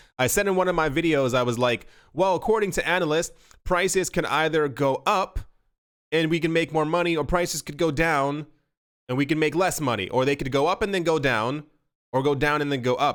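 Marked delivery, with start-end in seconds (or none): none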